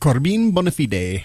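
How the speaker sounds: awful, terrible put-on Italian accent. Thanking a supporter during the show's Patreon plug, in an awful Italian accent. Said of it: "that was my Italian accent. Awful".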